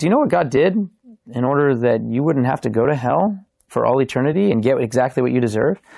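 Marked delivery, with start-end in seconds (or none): none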